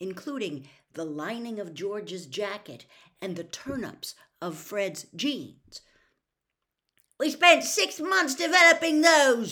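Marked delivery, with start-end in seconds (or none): 7.2-9.5 very high-pitched, very loud shout. Narrator reading Fred's line to his mother as she throws the toffees away, shouted. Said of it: "Fred shouted at his mother".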